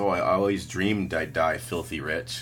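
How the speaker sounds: ordinary talk, nothing marked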